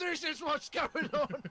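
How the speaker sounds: frantic, unhinged, hysterical put-on cry, high and drawn out. Playing a character lifting a body to the guard captain, hysterical shout in character. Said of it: "I love hysterical Fu".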